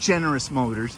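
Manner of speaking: ordinary talk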